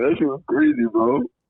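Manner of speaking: very high, weepy, tearful crying voice. Answering friends about being hurt by an ex: crying while talking. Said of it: "why are you crying".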